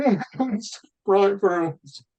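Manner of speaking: high, slow mock crybaby whine. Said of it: "all these fucking crybaby teachers going".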